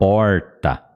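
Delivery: porta with R pulled back, São Paulo interior accent. Showing how the R in porta is pronounced: interior São Paulo accent, curled R. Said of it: "com o sotaque do interior de São Paulo".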